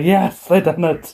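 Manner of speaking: thrilled, high, drawn-out excited cheer. Retelling a team winning a match: imitating own excited cheer. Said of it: "I'm flailing my arms around the air like".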